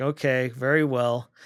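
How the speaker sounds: put-on grudging, disapproving, reluctant tone. Retelling a character's reply to another character's request, mimicking grudging disapproval. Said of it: "he said it in his voice of, you know, "I'm going to let you do it, but I think you're wrong".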